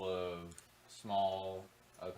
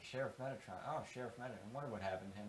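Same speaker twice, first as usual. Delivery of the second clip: mumbled, muttering chatter of several voices; 2 semitones higher, 4 dB quieter than usual. In a tabletop game, voicing people reacting to the sheriff's name, mumbling. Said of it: "You hear some mumbling like".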